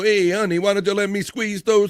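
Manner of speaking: high-pitched put-on New York accent. Imitating someone who comes up talking: imitating a New York accent. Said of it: "They don't trust when somebody comes up and go".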